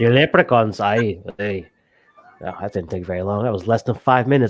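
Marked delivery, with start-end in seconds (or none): 0.0-1.7 deliberately bad, put-on Irish accent. Saying the name of a game's leprechaun race: crappy irish accent. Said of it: "crappy Irish accent".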